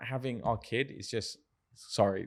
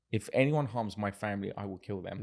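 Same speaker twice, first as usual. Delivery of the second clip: usual speaking voice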